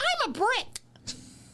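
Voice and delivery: very high-pitched yell. Retelling a cartoon scene where a character is thrown through a window: imitating Ralph Wiggum yelling. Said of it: "he yells".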